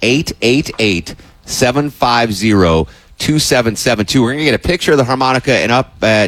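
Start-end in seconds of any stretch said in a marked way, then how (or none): 0.0-4.2 said slowly, at a slow pace. Radio host repeating the donation phone number for listeners, saying it slowly. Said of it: "I'm going to say it slow".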